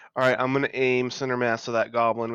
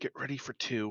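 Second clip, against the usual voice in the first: whispering, quieter; 9 dB quieter than usual. Speaking in character to the group as a watchman approaches: whispering to the group. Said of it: "I'm gonna whisper to the group".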